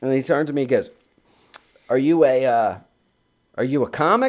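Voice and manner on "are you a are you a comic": slow, disgusted tone full of distaste. Retelling a comedy club owner questioning him: imitating a disgusted question. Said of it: "this look of, like, disgust".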